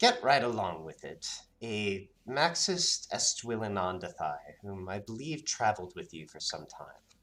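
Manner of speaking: attempted put-on old lady voice. Storyteller voicing Fallon as she gives her suggestion: Fallon's old lady voice. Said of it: "I should at least attempt the old lady voice".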